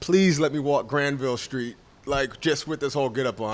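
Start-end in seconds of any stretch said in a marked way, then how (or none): none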